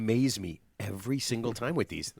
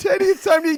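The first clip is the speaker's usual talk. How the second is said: raised, calling-out voice; 12 dB louder than usual. Acting out how a wife calls someone to eat: imitating Teddy's wife. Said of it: "She goes".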